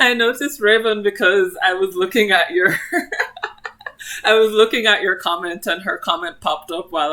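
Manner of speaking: loud, giggly, laughing while speaking.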